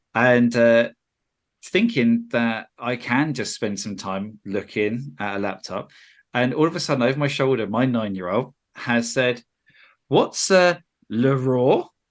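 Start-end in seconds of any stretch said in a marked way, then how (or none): 10.1-11.8 bad, clumsy fake French accent. Retelling the nine-year-old asking over their shoulder: trying a french accent. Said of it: "Like trying to put on a French accent".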